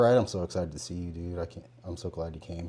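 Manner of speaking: low, muted, subdued and toned-down delivery. Showing words that contradict the delivery, in a low tone. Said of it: "My tone was low".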